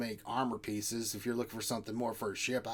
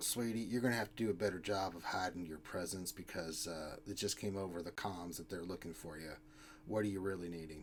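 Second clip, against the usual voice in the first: hushed, low, very quiet half-whisper; 5 semitones lower, 9 dB quieter than usual. Voicing a woman who beckons the listeners closer with her finger, in a half-whisper. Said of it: "she whispers like".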